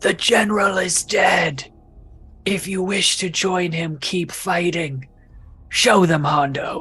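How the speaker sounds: slow, thunderous, booming amplified voice. Using thaumaturgy to boom a message across the battle: booming magically loud voice. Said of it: "use thaumaturgy to make my voice boom three times as loud".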